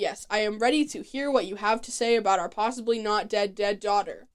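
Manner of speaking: ordinary talk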